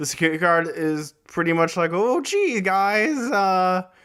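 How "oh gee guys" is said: put-on nervous cartoon teen voice, pitched higher. Retelling what a security guard says, in a Morty impression. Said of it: "I don't know why I'm doing a Morty impression".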